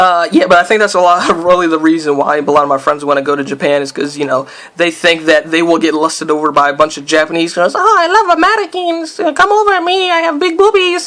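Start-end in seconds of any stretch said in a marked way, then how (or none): 7.7-11.1 heavy put-on Latin American accent, very high pitched.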